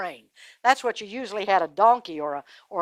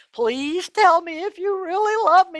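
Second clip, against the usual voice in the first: put-on tearful pleading voice, higher; 9 semitones higher than usual. Retelling a story, imitating Delilah's fake crying. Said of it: "she put on the crying act again".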